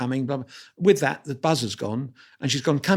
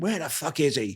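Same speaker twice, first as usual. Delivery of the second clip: heavy, broad Irish brogue, laid on thick; 4 dB quieter than usual. Retelling a voice he heard coming down the corridor, broad irish accent. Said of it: "this broad Irish accent coming down the corridor saying".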